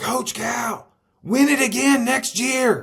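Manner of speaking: piercing, very high, loud excited screaming. Recalling Kentucky fans after the title win, the speaker is imitating a woman screaming. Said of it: "this woman screaming at him".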